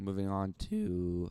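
voice cracking. Starting to describe the next course of a dream meal: voice cracking. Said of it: "bad voice crack".

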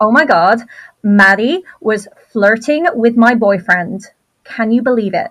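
loud, really terrible fake American accent. Asked for a short sample of it, in a really awful American accent. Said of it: "really awful American accent".

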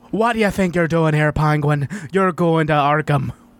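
put-on Irish accent in a caped superhero voice. After insisting they need an Irish Batman, performing one in an Irish Batman voice. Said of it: "we need an Irish Batman".

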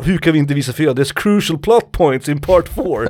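mock high-pitched screamed outburst. Telling how he shouted at the producers in the control room, retelling a scream. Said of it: "Skrek han".

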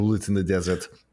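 Austrian accent, put on. Joking about a death by bullets in the desert, Arnold Schwarzenegger Austrian accent. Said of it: "Feel like that calls for an Arnold accent".

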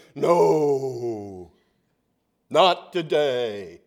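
the word no dropped low and stretched out. Speaker imagining God answering someone's prayer, booming voice of God. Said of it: "there's this big booming voice that you hear say".

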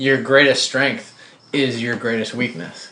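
normal talking voice

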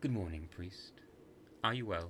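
ordinary delivery

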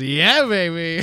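catchphrase delivered like a sound effect. Wishing for a sound effect of Austin Powers saying his line: Austin Powers voice. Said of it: "an Austin Powers sound effect where he just goes".

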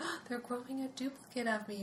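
put-on innocent tone.

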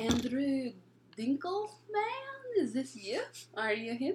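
fake, put-on Eastern European accent. Retelling a prank call to a friend: put-on eastern european accent. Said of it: "They're hiring Eastern Europeans?".

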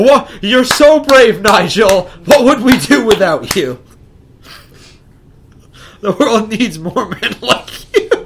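high, loud, fawning gushing while laughing. Speaker mockingly praises nigel; mock praise, laughing. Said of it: "I can't say that without laughing".

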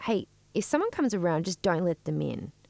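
ordinary talk

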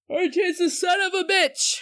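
said through a yawn, very high and slow. Reacting to the answer order, talking through a yawn. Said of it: "Sorry, I yawned".

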